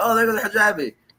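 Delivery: excited, high-pitched, thrilled gasp.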